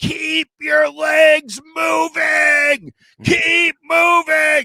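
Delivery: very high, very slow, drawn-out screaming. Retelling what someone yells during a practice rep: imitating someone screaming. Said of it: "he's just screaming at the top of his lungs".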